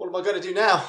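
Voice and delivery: put-on sudden Australian accent. Character whose accent changed completely after breathing the mist, australian accent. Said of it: "Put a shrimp on the Barbie".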